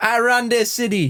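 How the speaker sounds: very high-pitched, put-on Jamaican accent. Retelling how a guy talks, quoting him in a fake jamaican accent. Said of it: "doing the fake Jamaican accent".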